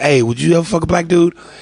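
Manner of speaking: ordinary talk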